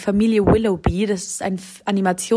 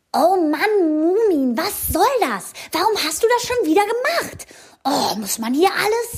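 cheeky delivery, pitched slightly higher; 9 semitones higher than usual. The speaker shows how Little My from the Moomins talks: cheeky Little My voice. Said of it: "die ist immer ziemlich frech und die redet ungefähr so".

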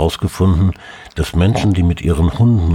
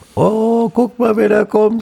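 put-on very high, babyish baby talk. Speaker describes how one lapses into talking to babies, baby talk. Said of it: "in so einer Babysprache".

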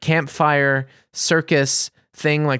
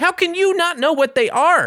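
mock, high-pitched, outraged screaming rant. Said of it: "and I screamed".

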